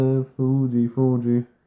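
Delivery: ordinary delivery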